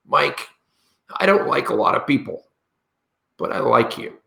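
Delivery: very rough, rasping, creaky delivery. Recalling what Harvey once said to Mike, imitating Harvey's rough voice. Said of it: "he had a very rough voice".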